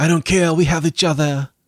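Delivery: put-on French-accented, high voice. Acting out a secret couple in a hotel room: put-on French accent. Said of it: "they turned French".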